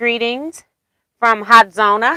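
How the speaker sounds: ordinary delivery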